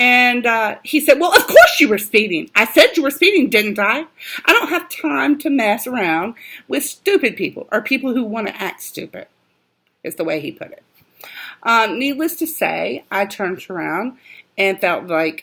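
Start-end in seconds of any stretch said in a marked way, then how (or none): 1.2-9.3 agitated, worked-up, high-pitched scolding tone. Retelling being stopped for speeding, the speaker quotes the officer, imitating an agitated officer. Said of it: "already appeared very agitated".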